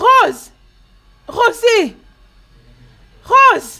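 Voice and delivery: very high, shrill, very loud yell. A mother calls for Rose; her child asks why she's shouting: shouting a name. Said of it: "Pourquoi tu cries comme ça?".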